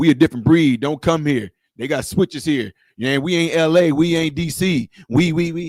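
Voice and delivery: mock tough-guy voice, deep bass.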